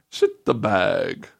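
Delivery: playful Italian accent. Repeating a phrase said to be easier in a fun Italian accent: fun Italian accent. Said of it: "hard to say in a fun Italian accent".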